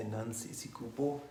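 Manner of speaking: normal talking voice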